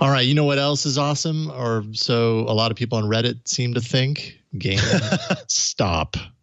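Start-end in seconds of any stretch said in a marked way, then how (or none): 4.6-6.2 very slow, deliberate, each word drawn out. Introducing the next story on the show, said slowly. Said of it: "I had to say that slowly".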